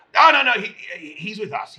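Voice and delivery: yelling out, calling loudly. A player, in character, yells out to the captain about the newcomer: yelling out. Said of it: "I yell out".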